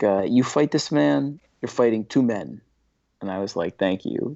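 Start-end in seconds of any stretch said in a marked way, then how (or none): 0.0-2.6 put-on Staten Island New York accent. Retelling what Thierry said to you, imitate Thierry's Staten Island accent. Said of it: "He's got the Staten Island accent".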